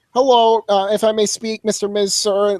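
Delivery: put-on meek voice with sarcasm. Retelling how Paul Heyman answered Miz: imitating Paul Heyman's sarcastic meekness. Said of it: "he meekly introduces himself".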